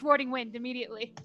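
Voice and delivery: ordinary talk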